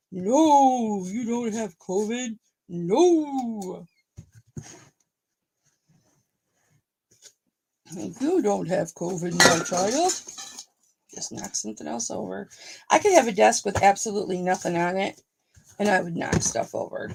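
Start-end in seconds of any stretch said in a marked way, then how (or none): 0.2-10.2 slow, grand delivery with long drawn-out 'no'. A speaker answers her own worry about COVID in her God voice. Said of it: "That's my God voice".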